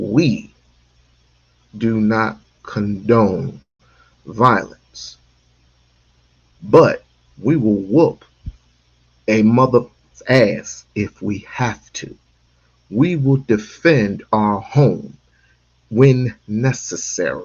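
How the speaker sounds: slow, clear, deliberate, word by word. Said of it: "I'm gonna say it slow".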